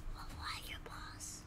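soft, unvoiced whisper.

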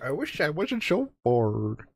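put-on very strong, thickly laid-on Canadian accent. Telling a story, showing listeners what Merrick sounds like; Merrick voice, strong Canadian accent. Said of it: "A very strong Canadian accent".

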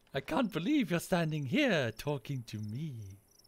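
soft, eerie, unsettling put-on voice. Speaker plays a character who meets the Grand Champion; creepy voice acting. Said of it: "Your voice acting always creeps me the fuck out".

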